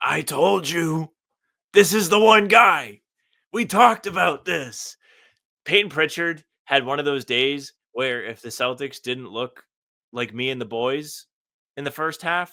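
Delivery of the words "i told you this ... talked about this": very loud, slow, drawn-out raspy voice. Retelling what Doc says about a player, in Doc's raspy voice. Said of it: "Doc in his raspy voice is like".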